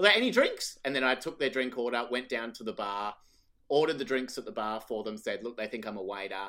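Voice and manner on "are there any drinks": very high, loud, thrilled and excited. Speaker retells being taken for a waiter, asking a couple about drinks: retelling an excited question. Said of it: "I said it like really excited though".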